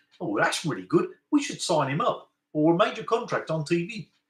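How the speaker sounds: put-on New Zealand bogan-type accent. Imagining someone watching his recording, the speaker uses a new zealand bogan accent. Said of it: "a New Zealand kind of bogan type accent".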